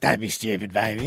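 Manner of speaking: man's flirtatious come-on delivery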